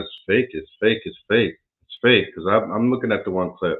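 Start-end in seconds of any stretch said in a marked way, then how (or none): none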